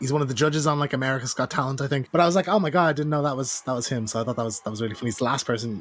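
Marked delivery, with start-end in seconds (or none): none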